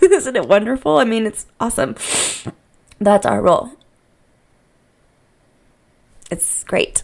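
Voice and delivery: choked up, tearful, crying through the words, gushing. Talking about what parents need to do, you're crying and emotional. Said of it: "I'm crying and I'm emotional".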